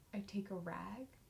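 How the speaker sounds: drawn out, very slow, very hushed and soft. Demonstrating how the other speaker should tell it, very slow and soft. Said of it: "very slow, and I want it very soft".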